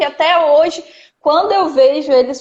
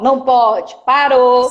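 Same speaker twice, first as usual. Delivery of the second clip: hard, firm, strict, no-nonsense tone. Contrasting with a friendly praising tone, now a harder, stern voice. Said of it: "voz mais dura".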